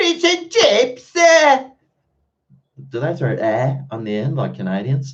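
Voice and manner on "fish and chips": very high, high-pitched put-on Cockney accent. Answering a request to say a phrase in a Cockney accent. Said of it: "Say fish and chips in a Cockney accent".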